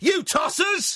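mock furious outburst, shouted slowly at high pitch.

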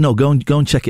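ordinary talk, nothing marked

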